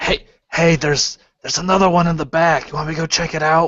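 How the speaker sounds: loud stage whisper. Telling the others in character about another body in back: loud whisper. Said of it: "that loud whisper".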